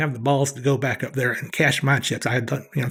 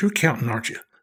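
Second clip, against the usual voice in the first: imitated, half-scolding muttering under the breath; 2 semitones lower than usual. Retelling what the dealer said under her breath: imitating a dealer muttering under her breath. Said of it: "kinda under her breath, kinda half scolded me".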